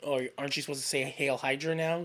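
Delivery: plain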